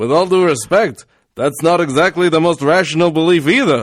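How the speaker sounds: slight put-on Yiddish accent. Encouraged to go ahead, the speaker reads a quote aloud in a light yiddish accent. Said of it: "should I do it with a little Yiddish sort of thing?".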